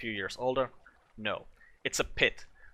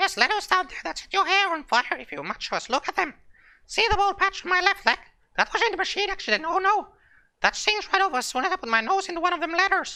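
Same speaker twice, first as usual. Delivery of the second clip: very high, loud, squeaky rat character voice; 6 dB louder than usual. Telling a story, the speaker voices a character in a rat voice. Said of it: "I gotta stop doing that rat voice".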